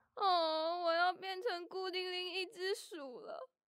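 tearful, sobbing speech while crying. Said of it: "别哭了".

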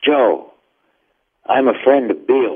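whispered voice. Retelling how strangers walk up in a supermarket, imitating someone whispering. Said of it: "and whisper, kind of, whisper".

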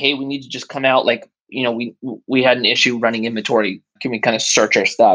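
plain

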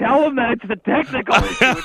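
loud shout pitched way up. Recalling how the show opened, retelling a yell. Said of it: "I'm yelling like".

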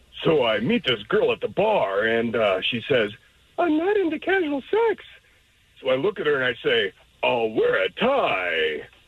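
animated stand-up comic delivery with swooping, swinging pitch. Doing a comedy impression for radio hosts to guess: Rodney Dangerfield impression. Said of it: "Rodney Dangerfield".

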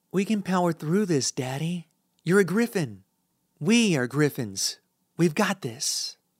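tearful half-whisper, voice cracking and breaking. Reading a daughter's plea to her father in hospital: half-whispering with a cracked voice. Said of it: "she whispers with a cracked voice".

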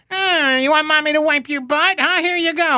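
very high, taunting teacher voice, pitched way up. Retelling a high school teacher's taunt: imitating teacher who sounded like the Penguin. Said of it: "who sounded like the penguin".

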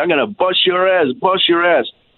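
harsh, held-in, mild threatening yell. Retelling guys who came over at a gas station: imitating someone screaming. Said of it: "they were screaming at me".

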